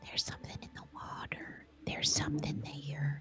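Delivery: small, airy, whispery voice. Game master leaning close to Nafir's ear, in a tiny, windy, whispery voice. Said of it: "tiny, windy, whispery voice".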